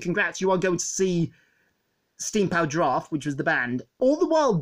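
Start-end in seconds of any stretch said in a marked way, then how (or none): none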